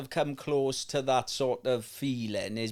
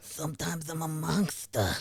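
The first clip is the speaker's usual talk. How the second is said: put-on, high-pitched New York accent; 2 semitones higher, 4 dB quieter than usual. Joking in an interview, do the Mike Tyson impression. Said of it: "the only impression I can do of".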